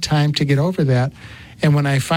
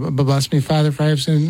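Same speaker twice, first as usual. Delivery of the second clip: ordinary talk, nothing marked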